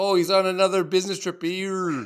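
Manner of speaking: fake Jamaican accent. Acting out a character's line in a joke: put-on jamaican accent. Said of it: "That's my Jamaican accent".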